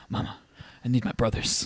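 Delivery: dramatic trailer announcer delivery. Quoting a favorite trailer line the way the actor says it: imitating The Rock. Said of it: "Just the way he says, he's like".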